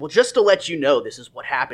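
ordinary delivery

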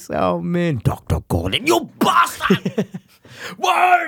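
put-on voice, swooping and sing-song. Joking with co-hosts, the speaker announces he'll do his voice: doing his voice. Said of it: "Just gonna do his voice".

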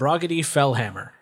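ordinary talk, nothing marked

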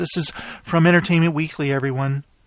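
mock, put-on serious voice. A host reads a quote from Entertainment Weekly to everyone, in a mock serious voice. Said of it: "I gotta do my serious voice here".

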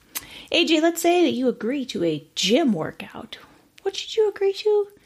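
patronizing, talking-down tone. Asking AJ what to agree to for a gym workout, condescending voice. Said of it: "when you do that voice".

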